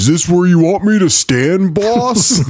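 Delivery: terrible, slow, deliberately bad henchman voice. Retelling a scene where Rocksteady stands against the wall: terrible Rocksteady voice. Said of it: "I know it's a terrible Rocksteady voice".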